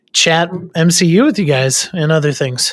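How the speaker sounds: ordinary delivery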